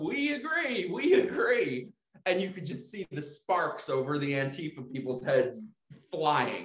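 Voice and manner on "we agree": acted-out screaming, much higher in pitch. Retelling how online people answered Antifa protesters: retelling a scream back. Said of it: "they started screaming that back at Antifa".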